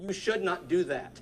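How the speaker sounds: steady, firm, deliberate parental tone. Showing what she says when her child misbehaves, firm and intentional. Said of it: "I do it firmly and with intention".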